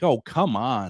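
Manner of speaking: amused, laughing, talking through a laugh. Retelling a father's reply while he laughed: imitating a father laughing while talking. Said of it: "he kind of laughed at me like".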